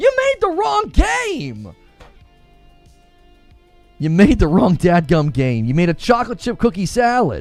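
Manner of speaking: comic rant with wide swooping pitch, stretched out. Ranting at the game's makers, channeling Bill Burr. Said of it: "Channeling Bill Burr or Sebastian Maniscalco".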